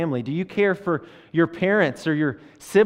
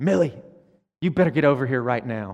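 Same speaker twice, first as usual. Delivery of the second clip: mock-angry, put-on anger, much lower pitch; 3 semitones lower than usual. Retelling their 8-year-old self calling millie, who wasn't coming: mock-angry. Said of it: "that excitement turned to anger".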